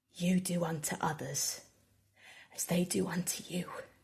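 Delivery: near, theatrical whisper. Narrating a game scene, a woman speaks to the priest she just stabbed, whispering. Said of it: "And she whispers".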